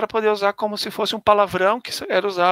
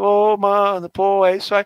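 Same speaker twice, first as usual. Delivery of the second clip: put-on slow, lazy, laid-back stoner drawl. Explaining how dubbed trolls talk in Portuguese, do a stoner voice. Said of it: "em português eles falam meio aquela coisa meio de maconheiro".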